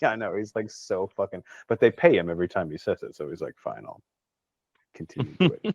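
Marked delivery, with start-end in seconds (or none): 3.6-5.7 pitched-up, fed-up, reluctant, utterly sick of it. Imitating an actor agreeing to repeat a line for pay: imitating a fed-up Alan Rickman. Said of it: "so goddamn sick of it".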